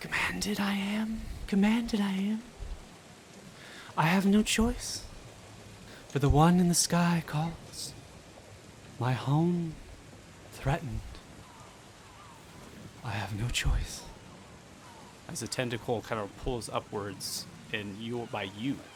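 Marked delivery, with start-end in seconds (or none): 0.0-14.0 high, feminine sea-creature kraken voice. Game narrator voicing a kraken answering those on the ship, female kraken voice. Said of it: "You hear a female kind of voice as best I can for a kraken".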